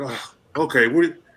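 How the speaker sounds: put-on frustrated tone in a man's voice. Retelling a phone call ordering steel: imitating a frustrated man. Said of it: "real frustrated".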